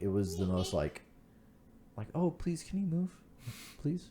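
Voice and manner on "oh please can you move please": mock timid, meek, breathy, polite, half-whispered pleading tone. Retelling how a mail truck driver honked at them: imitating a passive, polite plea. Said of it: "it was a very passive".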